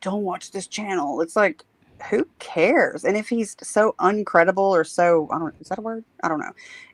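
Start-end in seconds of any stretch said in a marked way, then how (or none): 0.0-1.2 mock whisper, lower. Imitating people who warn others off a channel: imitating someone whispering. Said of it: "dudes whispering behind the scenes, like".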